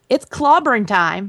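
ordinary talk

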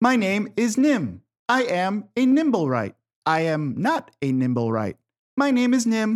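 very loud, booming voice with high pitch. Nim waves at Selise and speaks: very loud Nim voice. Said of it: "you just hear very loudly".

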